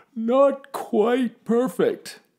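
groggy, drowsy voice, pitched a touch up. Father answering mother as she goes back to sleep, sleepy and yawning. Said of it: "Father yawned".

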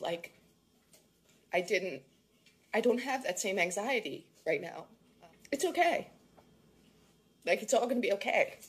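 crying while talking. Telling viewers how a video calmed them down, crying while talking. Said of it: "I know I'm crying".

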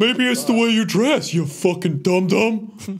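put-on dumb, dopey voice. Joking about SpongeBob characters swearing, doing a Patrick voice. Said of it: "Your Patrick is pretty good".

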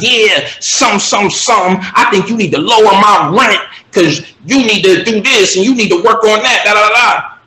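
pushy, threatening rant. Retelling a tenant's demands on the phone: imitating a tenant threatening. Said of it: "threatening me".

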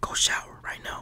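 steady, hushed whisper. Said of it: "I'm whispering".

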